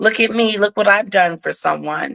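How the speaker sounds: normal talking voice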